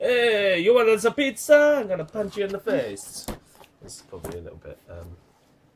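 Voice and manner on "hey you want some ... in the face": bad put-on Italian accent, shrill, very high, very loud. Joking that a toy figure looks like an italian cook: rubbish italian accent impression. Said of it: "a rubbish impression of an Italian person".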